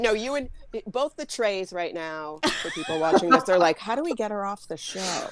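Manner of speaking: usual speaking voice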